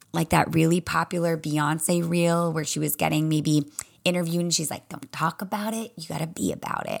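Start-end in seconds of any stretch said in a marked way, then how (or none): 4.9-7.0 soft, quiet, gentle voice. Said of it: "I can like hear the softness in her voice".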